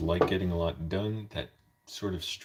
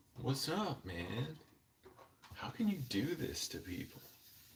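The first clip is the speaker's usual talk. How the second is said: put-on sing-song California accent, pitched up; 7 semitones higher, 8 dB quieter than usual. Trying out different accents, now a California accent. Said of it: "California accent".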